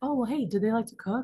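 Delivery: subdued, quiet, low-key, mild-mannered introverted voice. Showing how a quieter, introverted rep sounds on a sales call: quiet introverted salesperson. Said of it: "pretend to be a more quiet version of me".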